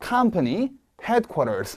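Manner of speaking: "company headquarters" both words stressed, slow.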